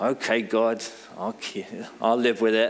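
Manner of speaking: through gritted teeth. Speaker acts out accepting god's word the wrong way, through gritted teeth. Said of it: "accept it through gritted teeth".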